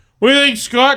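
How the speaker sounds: casual, high, put-on British accent. Mocking how the other man always sounds, imitating a British accent. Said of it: "That's how you always fucking go".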